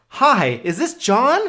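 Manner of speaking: eager, upbeat bright voice. Demonstrating how to open a phone call to a customer: enthusiastic. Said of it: "really hit him with a lot of enthusiasm".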